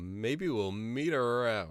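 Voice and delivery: shouted call carried back across a distance. Running away from a creature in a game, yelling back to the others: yelling back in character. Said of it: "I'm yelling back to".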